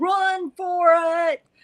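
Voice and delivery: shrill shouting, very high. Retelling calling out a car window to cows in a field: imitating own yell. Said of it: "I yell".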